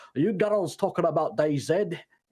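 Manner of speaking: poor put-on Scottish accent. Retelling what a guy at the smoke pit said: bad Scottish accent. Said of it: "worst fucking Scottish accent".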